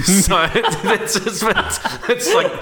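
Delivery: high-pitched, gushing, laughing delivery.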